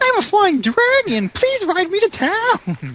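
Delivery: very high, slow, innocent-sounding squeak. Recalling the one line of a character voiced earlier: high-pitched Barry voice as Turtle Sue. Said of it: "my Turtle Sue voice ... made it into Barry".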